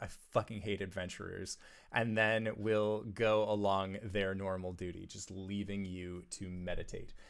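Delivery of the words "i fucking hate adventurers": muttered, lower, quieter, faster. A staff member passes by the adventurers, muttered under the breath. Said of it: "say under their breath".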